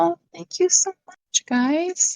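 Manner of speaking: high, slow put-on voice. Mimicking how a woman thanks people for donations: high-pitched put-on voice. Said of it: "her voice goes up high".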